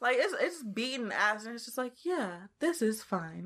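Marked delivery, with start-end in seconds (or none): 2.0-3.4 calm, slow, dead calm, unbothered voice. Retelling a fight scene from the movie, imitating the Chip's calm voice. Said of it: "the Chip's voice is so calm".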